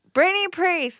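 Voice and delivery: loud, very high-pitched radio announcer voice. A podcast host introduces herself to listeners in a radio announcer voice. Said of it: "Talk like like a radio person".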